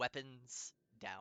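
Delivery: choppy, halting speech in broken Common. Voicing a tribesman who speaks to the party: speaking in broken Common. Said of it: "in a very kind of broken common".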